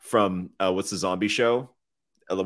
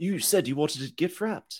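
put-on high-pitched British accent; 8 semitones higher, 4 dB quieter than usual. Suggesting British impressions, acting out Rowan Atkinson wrapping a present. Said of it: "Rowan Atkinson's wrapping his present and he's like".

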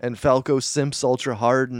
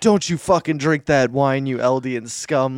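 mock-angry outburst, acted-out angry rant. Retelling how a man caught another about to drink wine, imitating someone getting pissed. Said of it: "he gets all fucking pissed at him".

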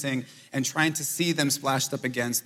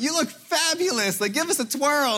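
mock shrill, very high, super loud yelled cheer; 13 semitones higher, 3 dB louder than usual. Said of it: "I'll just yell things".

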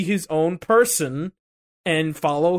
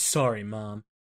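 put-on edgy voice, much lower and quieter; 8 semitones lower, 7 dB quieter than usual. Recounting a scene, the speaker quotes a character's line, imitating Ame's edgy tone. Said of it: "in a very edgy way".

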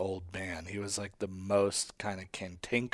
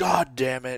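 mock pissed-off man, angry outburst; 4 semitones higher, 6 dB louder than usual. Retelling a man who skipped his souffle to catch his shows, mock-angry. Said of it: "he got all pissed off".

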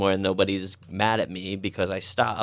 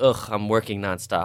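mock disgusted tone, groaning, full of ugh. Mimicking people who boast about overworking, in a mock-disgusted tone. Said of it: "they'll say it with disgust".

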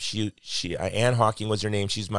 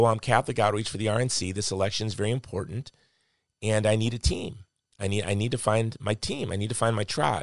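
ordinary talk

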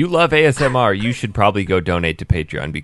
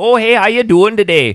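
put-on Upper Michigan accent; 13 semitones higher, 6 dB louder than usual. Acting out the lady at the store greeting the speaker, imitating a true Yooper accent. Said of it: "a true Youper accent".

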